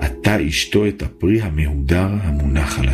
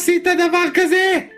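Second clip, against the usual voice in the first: anguished scream of pain, much higher pitch. A wife hears her husband sold his tefillin, screaming in great pain. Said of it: "צעקה בכאב עצום".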